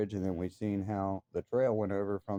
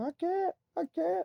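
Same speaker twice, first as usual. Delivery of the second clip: mock very high, shrill, stretched-out screaming. Retelling a climbing scare, acting out the other climber's reply: retelling someone screaming. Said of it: "And I'm screaming at him".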